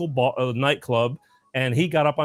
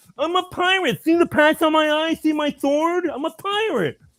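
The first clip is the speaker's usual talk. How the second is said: put-on impaired speech pattern, much higher; 3 dB louder than usual. Retelling a boy in a pirate costume answering a woman, imitating cleft palate speech. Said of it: "he kind of talked like this".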